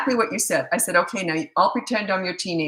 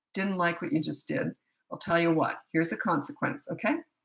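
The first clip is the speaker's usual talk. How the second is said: real quiet, hushed, stern disciplining voice; 7 dB quieter than usual. Describing how she disciplines her kids, the mother shows her real quiet voice. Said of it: "I get real quiet".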